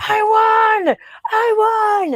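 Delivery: mock, very high screaming, stretching I. Retelling how a man was screaming in the car, retelling a scream. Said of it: "he's like screaming in the car".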